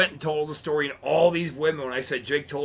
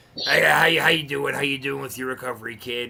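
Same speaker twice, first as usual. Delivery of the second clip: gravelly, raspy put-on voice. Retelling a phone call about recovery: gravelly raspy Jake Roberts voice. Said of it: "he's got that gravelly, raspy".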